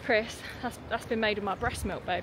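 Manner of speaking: ordinary talk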